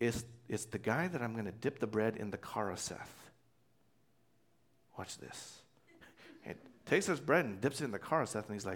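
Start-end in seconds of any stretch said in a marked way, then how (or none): 0.0-5.6 soft, close, secretive whisper. Retelling how Jesus answers John back: imitating a whisper. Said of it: "whispers it back".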